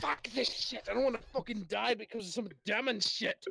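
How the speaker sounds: very high, loud put-on dwarf character accent. Voicing a surrendering dwarf enemy in a fight: dwarf character accent. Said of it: "Perfect accent right there".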